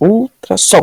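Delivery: ultrassom with weight on the last syllable som. Answering a quiz question on the stressed syllable of ultrassom, stress on last syllable som. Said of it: "Qual que ficou mais forte? A última, né? O som".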